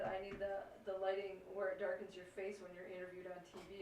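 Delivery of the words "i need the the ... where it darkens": usual speaking voice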